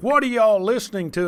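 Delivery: very stern, gruff voice. Retelling how the pastor came downstairs and confronted the kids, mock-stern gruff voice. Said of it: "in a very stern and gruff voice".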